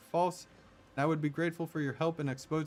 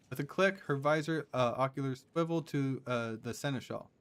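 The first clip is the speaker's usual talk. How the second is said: normal talking voice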